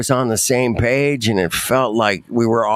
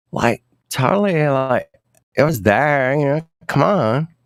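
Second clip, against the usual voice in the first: put-on California Valley Girl way of talking; 2 semitones higher than usual. Doing a valley girl impression on a call: valley girl voice. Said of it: "but I can do Valley Girl".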